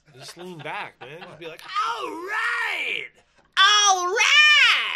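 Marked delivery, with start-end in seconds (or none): 1.6-4.9 very loud, very high, drawn-out, overblown shrill holler. Showing someone how to deliver the vocals into the mic, over-the-top exclamation. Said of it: "That was too much".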